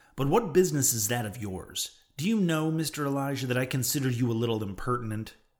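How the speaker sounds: plain reading voice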